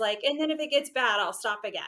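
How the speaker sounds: ordinary delivery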